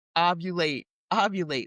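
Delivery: ordinary delivery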